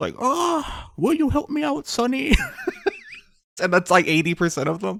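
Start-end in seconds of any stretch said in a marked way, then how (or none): 0.2-2.3 put-on, very high, slow little old lady voice. Mocking streamers who do roleplay, demonstrating their old woman voice. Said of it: "they just do like an old woman voice".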